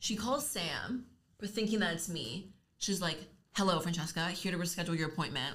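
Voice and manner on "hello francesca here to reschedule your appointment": mock catty, bitchy, snippy phone voice. Retelling a receptionist's phone call, imitating someone talking bitchy. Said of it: "all bitchy".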